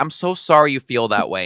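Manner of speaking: mock, put-on, condescending, belittling tone.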